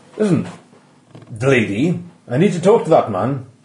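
put-on faint, vague Welsh accent. Voicing the ex-Reverend Winthrop confronting staff: vaguely Welsh accent. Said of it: "he's got a vaguely Welsh accent".

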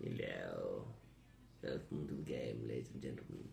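very low, rough, creaky silly put-on voice. A player opening the game session, in a put-on voice. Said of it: "whether [name] is intending to use that particular voice".

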